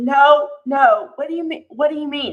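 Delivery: acted-out heated, insistent, loud, agitated yelling. Speaker recounting how a person reacted during questioning, retelling a yell. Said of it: "And he was like yelling".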